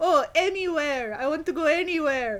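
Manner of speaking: put-on unpracticed, vaguely Dutch accent. Voicing a little fish boy getting into a taxi: unpracticed accent, maybe Dutch. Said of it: "He might be Dutch".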